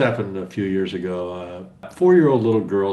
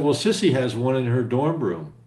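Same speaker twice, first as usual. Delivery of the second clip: usual speaking voice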